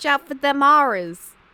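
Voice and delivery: loud, high, put-on New York accent. Admitting they're not the best at it, the speaker tries a new york accent. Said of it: "How do you say horrors in New York?".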